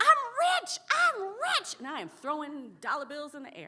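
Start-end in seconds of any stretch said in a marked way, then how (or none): 0.0-1.7 shrill, drawn-out, very high, very loud scream. Retelling an eighth-birthday reaction to money cards: imitating own childhood screaming. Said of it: "I started screaming".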